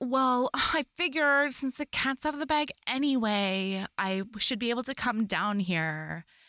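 mock whiny, complaining voice throughout. Retelling what she said about coming down here, imitating a whiny voice. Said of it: "she says it like she's so whiny about it".

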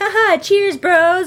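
high, sassy, sarcastic delivery.

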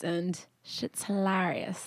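put-on British accent. Speaker recommends a show to listeners in a put-on british accent. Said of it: "a British accent".

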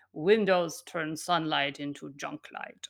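put-on German-accented voice. Speaker quoting the chronobiologist Dr. Wunsch, doing Dr. Wunsch's German accent. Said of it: "he says in his beautiful accent".

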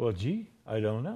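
put-on low, soft, murmured, slight British accent. Retelling Peter's reply when asked where he learned this, Peter with slight British accent. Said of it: "with a slight British accent".

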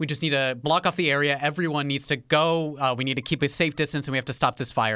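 high, loud, urgent official-sounding commanding voice.

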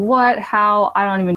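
ordinary talk

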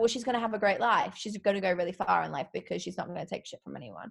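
ordinary talk, nothing marked

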